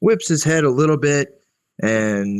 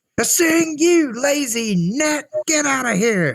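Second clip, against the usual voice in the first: very high, stretched-out, drawn-out angry shout. Narrating a scene where an angry voice from the inn interrupts the stories. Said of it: "interrupted by an angry voice".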